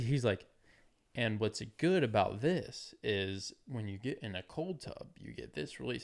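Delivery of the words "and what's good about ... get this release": unhurried, deliberate, slow, drawn-out pacing. Imitating a podcaster who talks slowly: imitating Huberman talking slowly. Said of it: "I feel like he talks a little slow".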